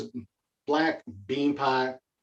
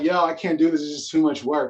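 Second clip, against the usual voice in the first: mock crying, frustrated, tearful kid voice; 2 semitones higher than usual. Retelling talking to mom over math homework: imitating own past crying. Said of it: "I'm kinda crying to my mom".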